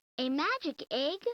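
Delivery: eager, wondering, high, excited voice. Voicing a girl opening her Christmas present: asking excitedly. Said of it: "Lisa asked excitedly".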